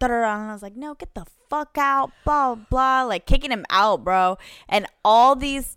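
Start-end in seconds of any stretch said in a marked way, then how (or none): 0.8-2.1 upset, mild, pitched-up half yell. Retelling kicking someone out of the room: imitating her own yell. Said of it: "I'm over here yelling at him".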